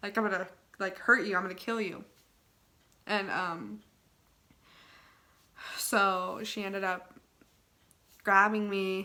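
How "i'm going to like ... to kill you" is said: put-on evil ghostly voice.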